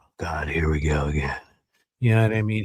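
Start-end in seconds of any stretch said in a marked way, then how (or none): 0.0-1.4 mock worn-out, seen-it-all, weary gray alien voice. Acting out a gray alien smoking on a ship: jaded gray alien voice. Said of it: "He's super jaded".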